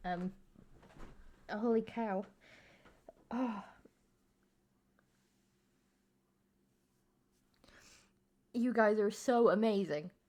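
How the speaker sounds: choked up, very slow and drawn out, near tears. Thanking others after a gift in chat: emotional, near tears. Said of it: "I am not usually this emotional a person".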